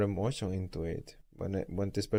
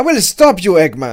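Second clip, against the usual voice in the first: stiff, flat, shrill, very high, loud amateur read; 9 semitones higher, 19 dB louder than usual. Mocking a game's voice acting, demonstrate a line as bad amateur voice acting. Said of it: "Be like".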